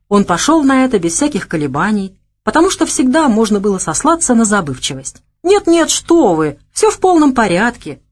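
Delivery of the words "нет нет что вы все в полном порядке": sly, snide, sarcastic, pitched-up reassuring tone. A finalist answers the tournament judge: snide assurance. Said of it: "ехидно заверил Савелий".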